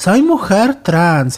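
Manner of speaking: dry, sarcastic, mocking tone. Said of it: "con sorna".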